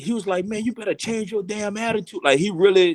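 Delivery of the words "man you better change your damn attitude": acted harsh scolding, pitched up. Retelling a coach scolding a player: imitating a coach scolding. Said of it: "he really, you know, dug into me".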